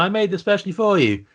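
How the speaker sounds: put-on small child voice. Retelling a scene from a show, imitating a little kid's voice. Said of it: "the little voice of the kid going".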